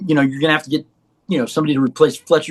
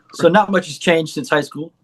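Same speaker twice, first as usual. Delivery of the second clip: ordinary talk, nothing marked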